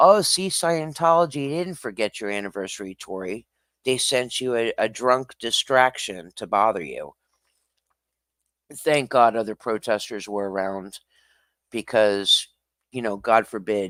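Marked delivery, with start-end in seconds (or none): none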